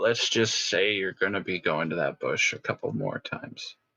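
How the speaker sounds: very quiet, muttered under the breath. Adding a remark in character during a game scene: very quietly under the breath. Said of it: "He says very quietly under his breath".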